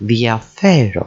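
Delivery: diafero with stress on second-to-last syllable fe. Teaching greek word stress, moving the emphasis along: diafero stressed on second syllable. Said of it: "transfers the emphasis on the second syllable".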